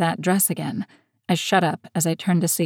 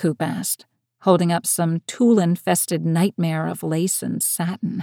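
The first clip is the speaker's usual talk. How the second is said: plain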